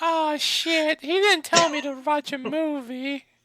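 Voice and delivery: goofy, very high-pitched put-on silly voice. A podcast guest reacting after being asked about a movie, in a silly voice. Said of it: "silly voice".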